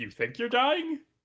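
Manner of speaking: surprised tone. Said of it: "surprised, like".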